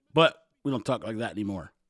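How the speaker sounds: normal talking voice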